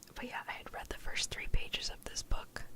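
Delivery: soft, hushed whisper throughout. Speaking to the audience, whispering. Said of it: "The whispering's starting to hurt my throat".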